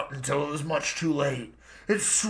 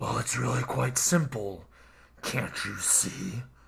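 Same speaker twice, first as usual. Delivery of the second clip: deep, hushed, growling creature voice; 5 semitones lower, 5 dB quieter than usual. Narrator reads the risen entity's answer to a terrified question, growling. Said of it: "It growled".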